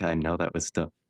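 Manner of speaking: mock somber, put-on solemn tone. Retelling how he talked to Dan, imitating a somber tone. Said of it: "And he's like all somber".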